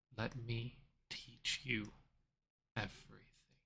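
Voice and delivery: hushed, soft, close whisper. The narrator voices a clawed figure speaking into the listener's ear, whispering. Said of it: "you hear the voice whisper".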